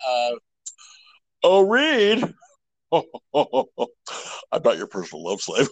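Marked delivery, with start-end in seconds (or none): 1.4-5.7 lumbering monster voice, sing-song, wide pitch swings. Imagining who would play the Thing: Herman Munster voice. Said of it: "that would be Herman Munster playing the Thing".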